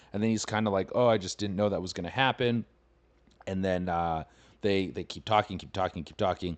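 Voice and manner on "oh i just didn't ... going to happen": usual speaking voice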